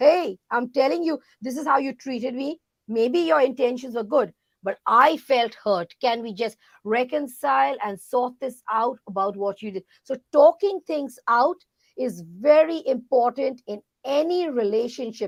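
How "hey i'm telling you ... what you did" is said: ordinary talk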